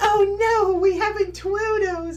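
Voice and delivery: silly squeaky squid-monster voice, very high and loud. Retelling first trying the squid creatures' voice at work: imitating own silly creature voice. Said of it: "I was just dying at work".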